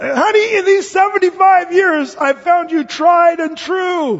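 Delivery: loud, high call. Telling a joke, speaker voices an old husband raising his voice to his wife. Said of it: "he had to really raise his voice".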